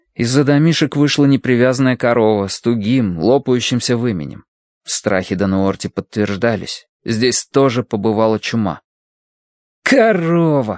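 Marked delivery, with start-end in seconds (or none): 9.8-10.8 irritated, annoyed, tossed out, pitched higher. Colin, seeing a loose cow come out from behind the huts, speaks annoyed. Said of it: "с досадой бросил Колин".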